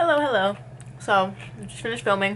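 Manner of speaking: speaking between bites. Greeting viewers after filming, talking while eating. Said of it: "I'm eating".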